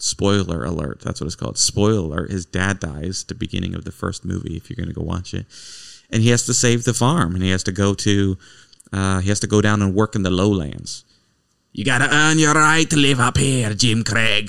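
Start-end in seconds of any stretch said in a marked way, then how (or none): 11.7-14.5 put-on slight Irish accent. Quoting a line from a movie, imitating an Irish-sounding accent. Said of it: "That sounded kind of Irish".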